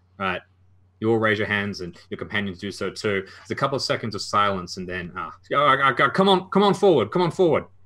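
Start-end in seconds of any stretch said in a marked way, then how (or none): 5.5-7.6 put-on strong southern-accented loud, high-pitched holler. Storyteller voicing an unseen figure calling the listeners forward: strong southern accent yell. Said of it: "a strong uh, southern accented voice yell".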